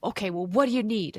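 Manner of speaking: loud, aggressive snapping.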